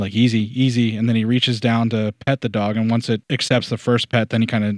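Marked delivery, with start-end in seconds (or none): none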